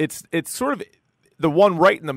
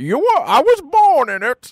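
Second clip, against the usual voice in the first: bad villain voice, far too high and drawn out; 10 semitones higher, 5 dB louder than usual. Admitting he can't do this voice but trying again anyway: bad Bane impression, too high. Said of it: "I go way too high".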